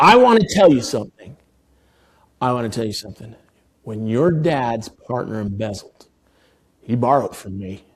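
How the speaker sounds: put-on angry, mean-sounding male voice. Retelling what an older man said when angry: imitating an angry, mean voice. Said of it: "He seemed mad and he spoke mean".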